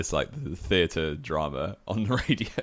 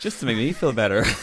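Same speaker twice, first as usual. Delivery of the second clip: put-on high, loud, botched Irish accent, belted out; 6 semitones higher, 6 dB louder than usual. Quoting Roy Keane about a driver's crash, in a bad Roy Keane Irish accent. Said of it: "Your Irish accent is hilariously bad".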